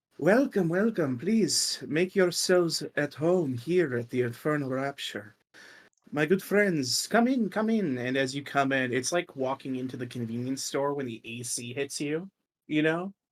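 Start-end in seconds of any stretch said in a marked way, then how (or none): 0.2-8.0 warm, hospitable, welcoming tone. Voicing the owner greeting guests entering his establishment: welcoming establishment owner. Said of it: "and he goes".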